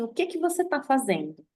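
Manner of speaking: put-on stern, severe, austere, unshaken tone. Retelling a story, Emmanuel confronts a panicking Chico; mock-stern, as Emmanuel. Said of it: "Ele olha sério para o Chico e fala assim".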